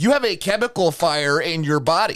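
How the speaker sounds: put-on screaming. Retelling what a doctor shouted about blood test results: imitating a doctor screaming. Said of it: "screaming at me".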